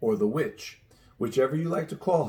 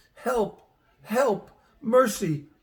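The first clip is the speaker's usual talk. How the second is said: weak, feeble, faint, very high-pitched cry; 10 semitones higher than usual. Narrating a story, the witch staggers after the others crying for help: faint voice. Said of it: "cried the witch, in a faint voice".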